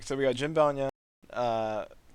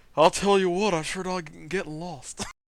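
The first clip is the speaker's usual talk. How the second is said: put-on heavy, laid-on Texan accent, pitched up; 5 semitones higher than usual. Joking about a character with a Texan accent: Hank Hill voice. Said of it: "All I hear is Hank Hill".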